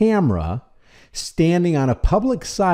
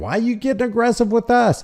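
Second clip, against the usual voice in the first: high, fast, mocking cop voice. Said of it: "The guy with the gun is saying".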